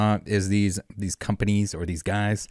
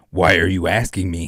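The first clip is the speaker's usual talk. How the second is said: louder, evil-sounding cowboy voice. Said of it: "the evil cowboy ... as, uh, Eric's voice".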